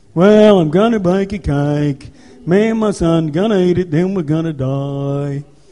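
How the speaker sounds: low, slow voice dragging every word. Retelling a Bible story, voicing the woman baking a cake: Eeyore voice. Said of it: "it's like Eeyore off Winnie the Pooh".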